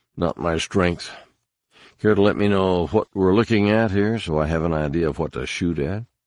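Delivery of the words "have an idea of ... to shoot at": plain reading voice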